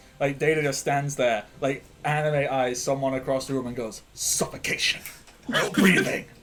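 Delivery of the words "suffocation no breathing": put-on dead serious, no joking at all. Acting out a character who stares someone down: deadly serious. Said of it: "just deadly serious".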